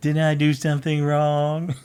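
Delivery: small, whining, high-pitched voice. Reading a listener's email aloud, whiny Banu voice. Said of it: "whiny Banu voice".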